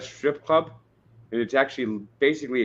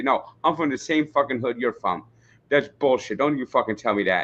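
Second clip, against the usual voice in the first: put-on angry judge voice. Retelling how the judge answered an excuse: imitating the angry judge. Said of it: "the judge would basically say".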